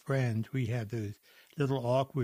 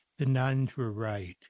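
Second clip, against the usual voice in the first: plain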